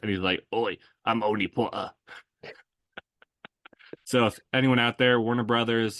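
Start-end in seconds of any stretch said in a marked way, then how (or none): 0.5-1.9 put-on rough pub-style British accent. Imitating a stereotyped pub-crawling Brit, in a rough pub-style British accent. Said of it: "my favorite British accent thing ... like the stereotype of like the bar crawling".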